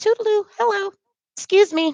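very high, sugary, put-on polite voice. Retelling a polite request to a janitor at work: put-on polite "Susan" voice. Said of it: "I put on my best Susan".

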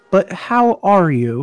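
southern-tinged therapist voice. Acting out Chuck asking again after you say you're good, in Chuck's therapist voice. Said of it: "He has that therapist voice".

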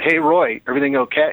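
put-on shouted calling out. Retelling a schoolyard fight when a motorcycle rider pulls up: imitating someone shouting. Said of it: "He just shouts out".

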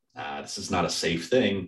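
ordinary delivery

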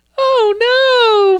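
very high, weird falsetto, "oh" stretched. Mocking how the game princess sounds, weird Princess Peach falsetto. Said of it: "that weird, "Oh, no," falsetto".

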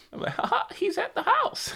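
high squeaky cartoon voice. A dad answers his daughter asking where Mickey is, in a Mickey voice. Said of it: "Was that Mickey?".

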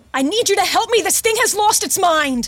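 high, screaming cry. Voicing a woman begging a player character for help: screaming for help.

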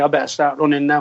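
ordinary talk

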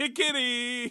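high, squealed, laughing giggity. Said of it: "It's our famous catchphrase".

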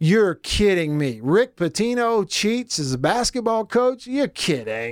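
feigned disbelief, laid-on sarcasm, fake surprise. Reacting to a cheating story from the first hour: sarcastic fake surprise.

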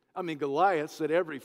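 plain

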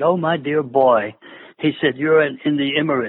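imitated British accent. Recalling asking a man if it was safe after Iraq, speaker quotes his reply, British accent. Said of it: "in a British accent".

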